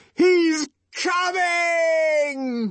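shrill, very high shout, "coming" drawn out. Narrator reads a character's line in a story as others rise; yelled. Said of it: "yelled Jim Bokanovsky".

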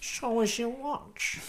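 put-on Manchester accent. Playing a robber asking for watches, in a North Manc accent. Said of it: "Is that North Manc?".

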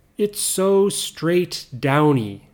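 ordinary talk, nothing marked

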